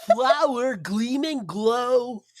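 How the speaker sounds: high put-on cartoon clown voice, "glow" stretched. Trying a phrase as Krusty the Clown, Krusty the Clown voice. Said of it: "I wonder if I can do that as Krusty the Clown because I can do a wicked Krusty the Clown".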